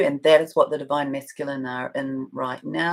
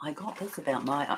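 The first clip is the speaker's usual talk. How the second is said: hushed, barely audible, very quiet whisper; 9 dB quieter than usual. Starting to share a message received about someone, whispering. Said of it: "here I am whispering".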